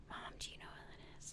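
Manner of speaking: very hushed whisper. Retelling a moment in line at a register, quoting what she whispered to her mom: retold whisper. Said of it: "I was like whispering to my mom".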